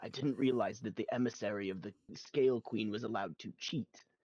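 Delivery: stage whisper, spoken as an aside. Speaking in character to a game figure: stage whisper. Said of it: "I will stage whisper about that to Scar".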